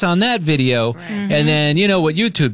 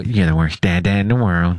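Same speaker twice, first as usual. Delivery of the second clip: muttered aside, much lower; 9 semitones lower than usual. Retelling what she muttered at the speaker, quoting a mutter under her breath. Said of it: "she had to under her breath go".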